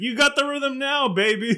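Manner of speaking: put-on hollered cheer, very high. Retelling what Jimmy Hart yells out during a match: imitating Jimmy Hart yelling. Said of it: "things that he yells out".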